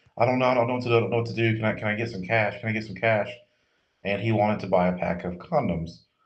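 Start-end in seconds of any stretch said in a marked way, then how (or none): none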